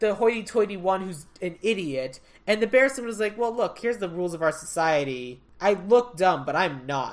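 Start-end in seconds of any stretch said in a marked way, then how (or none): none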